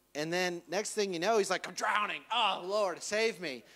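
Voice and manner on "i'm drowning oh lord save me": put-on slow, drawn-out, panicked, freaked-out pleading. Retelling Peter sinking in the water: imitating Peter freaking out. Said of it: "he's freaking out over here".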